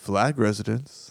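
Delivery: put-on composed, capable-sounding, calm, low voice. Speaker retells how his dad answered the phone mid-argument, imitating dad's calm phone voice. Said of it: "the most capable sounding calm voice".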